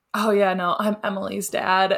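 mock chuffed, proud, bragging dad voice. Retelling what a dad tells people at gas stations: imitating proud dad. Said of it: "he's just, like, so proud".

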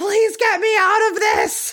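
acted, very high-pitched shriek. Recounting a woman grabbing Sawyer's arm as a deputy takes her: retelling a scream. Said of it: "starts screaming".

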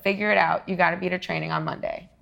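usual speaking voice

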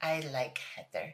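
weird put-on babyish little voice. Retelling a reality show moment where two cast members make up: imitating a weird baby voice. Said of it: "This weird baby voice".

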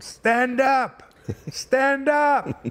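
mock very high, very slow, drawn-out shout. Retelling how the pitcher yelled from the mound: imitating Nolan yelling. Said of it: "he's yelling at me from the mound".

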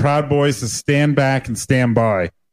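plain

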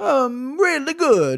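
very slow, swooping, exaggerated fake Italian accent. Praising a fight card while closing the show: put-on Italian accent. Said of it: "That's my Italian accent".

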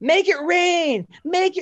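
mock yelling in a woman's voice. Retelling a woman heard through the wall: imitating a woman yelling. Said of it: "she starts yelling".

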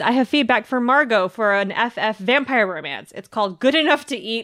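ordinary talk

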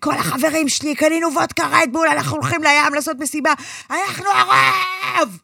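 mock kid voice, fast, high, loud, last words yelled.

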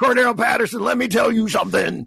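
wrestling promo style delivery. Addressing a player, drifting into a Hulk Hogan voice. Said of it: "you just blended into, like, Hulk Hogan".

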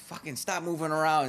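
mock loud, shrill yell. Retelling what a woman always yells at them, imitating her yelling. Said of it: "she's always yelling at me".

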